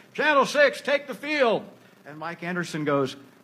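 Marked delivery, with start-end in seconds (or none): 0.2-1.6 commanding, forceful, very high referee yell. Recalling refereeing a game, calling a team onto the field: retelling a forceful referee yell. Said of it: "in my very forceful referee voice".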